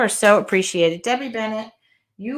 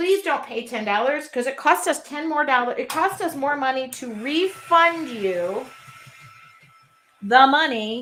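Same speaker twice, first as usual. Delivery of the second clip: emphatic, every word pressed, loving and warm; 4 semitones higher than usual. Speaking to members of the Artful Journey, sounding like yelling. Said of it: "It just sounds like I'm yelling".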